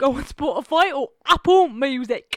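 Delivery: put-on loud, slightly Australian accent.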